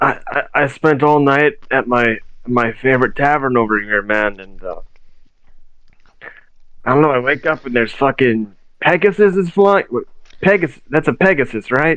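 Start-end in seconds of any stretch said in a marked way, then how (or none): 0.0-9.8 put-on halting, befuddled, rambling, stammering drunk babble. In a roleplay, a character answers someone questioning him, acting drunk. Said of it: "pretending to be drunk".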